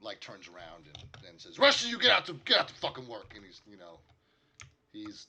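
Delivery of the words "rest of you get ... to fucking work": very high, very loud, angry barking dwarf voice. Game master voices a dwarf ordering the group; stereotypical angry dwarf voice. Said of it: "he's mad. He's angry".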